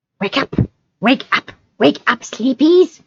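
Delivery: high, hushed, whispering creature voice. Reading a story aloud, voicing Gollum waking the hobbits: whispering Gollum voice. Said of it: "he whispered".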